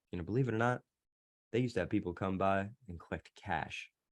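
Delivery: soft gentle tone. Recounting leaning forward while talking about the account, switching to a softer tone. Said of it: "that's a tonality change, softer tone, softer approach".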